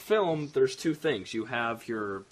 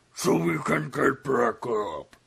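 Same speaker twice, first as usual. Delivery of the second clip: clumsy, bad, gritty, rasping, creaky hero voice, very slow, drawn out; 4 dB louder than usual. Redoing a movie line in a bad Batman voice. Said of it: "that was my bad Batman".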